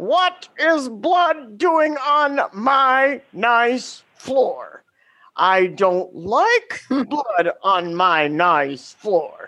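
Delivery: put-on booming yell. Retelling catching students fighting in class: retelling a booming yell. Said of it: "in my most booming voice".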